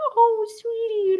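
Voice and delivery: put-on very high-pitched little baby-talk voice. The speaker imitates how a man talked to women he was attracted to: imitating baby talk. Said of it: "much more like baby talk".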